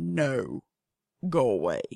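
very low voice, dropped an octave. Telling off a yard cat: voice dropped an octave. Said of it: "I will drop an octave in my voice".

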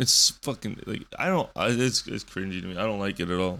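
ordinary delivery

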